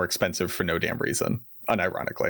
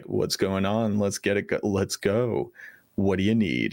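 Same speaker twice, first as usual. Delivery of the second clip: mock California surfer-dude voice and attitude. Retelling how a breakfast waiter greeted them, in a put-on California surfer attitude. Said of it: "like California surfer attitude".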